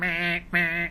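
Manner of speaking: high, angry, grumpy grumble. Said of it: "the clock gets angry and he starts going".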